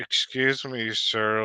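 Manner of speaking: ordinary talk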